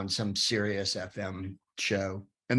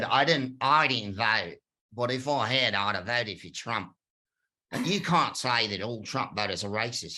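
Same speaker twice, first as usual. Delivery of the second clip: put-on Australian accent. Quoting a man who lost it at the speaker for calling Trump voters racist, Australian accent. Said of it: "in his Australian accent".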